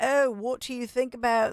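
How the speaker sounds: put-on English banker accent. Retelling what three bankers from the UK asked in Portofino, in an English accent. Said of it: "actually a really good English accent".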